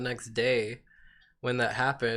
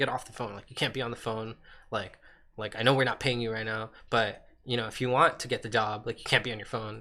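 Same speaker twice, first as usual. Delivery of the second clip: put-on, really aggressive, scolding telling-off. Retelling how the manager scolded them at work: imitating an aggressive manager. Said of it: "she got really aggressive and was like".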